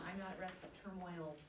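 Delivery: normal talking voice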